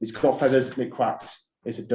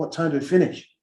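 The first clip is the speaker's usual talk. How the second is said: put-on American-accented speech; 4 semitones higher than usual. Retelling a man's question over a cigar and a drink, in an american accent. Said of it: "That's my American accent".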